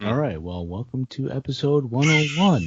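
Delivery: put-on on-air radio announcer voice. Opening a podcast episode, in a put-on radio announcer voice. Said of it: "That's my radio voice".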